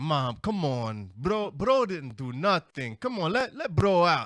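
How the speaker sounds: put-on loud, sing-song Spanish accent. Retelling how a friend pleaded with mom: imitating friend's spanish accent. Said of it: "with his Spanish accent".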